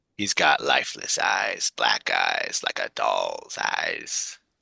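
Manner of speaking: very deep, low, rough, creaky character voice. Repeat a trivia line for a player who asked to hear it again, impersonating a movie character. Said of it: "doing my best impersonation of the character".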